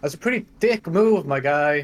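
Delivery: loud call projected out into the open air. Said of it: "I'm just gonna call out".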